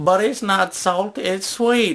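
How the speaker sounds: Ozark-type hillbilly voice. Telling a story about doing voices, in a stereotypical hillbilly accent. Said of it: "most stereotypical hillbilly, you know, Ozark type accent".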